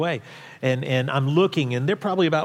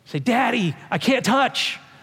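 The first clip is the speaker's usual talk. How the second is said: put-on high, slow, panicked child's voice; 9 semitones higher than usual. Father retelling his daughter calling to him as the tide came in, imitating Abby's panic. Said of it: "in this very panicked voice say".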